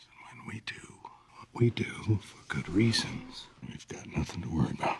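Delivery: creepy, unsettling delivery. A man touching a woman who doesn't want it reassures her, creepy tone. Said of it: "Don't say it in such a like creepy tone".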